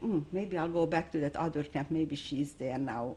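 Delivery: ordinary delivery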